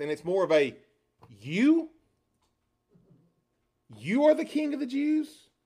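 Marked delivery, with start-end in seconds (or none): 1.4-5.3 heavy emphasis on the word you. Explaining the emphasis of the question in the original Greek: stress on the word you. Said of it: "You catch the difference in the emphasis there and the inflection of the language?".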